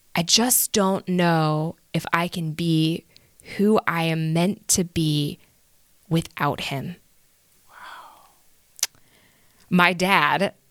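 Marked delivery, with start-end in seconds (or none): none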